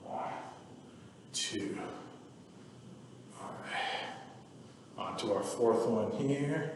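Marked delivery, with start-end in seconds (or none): 1.3-6.7 soft, hushed whisper. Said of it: "I don't know why I'm whispering".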